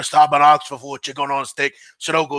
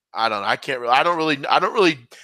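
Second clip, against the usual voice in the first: ordinary delivery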